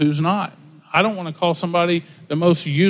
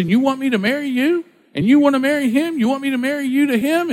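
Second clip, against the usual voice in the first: put-on angry outburst, higher pitch; 8 semitones higher than usual. Retelling a man at a Sunday service: imitating someone freaking out. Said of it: "starts freaking out on these people".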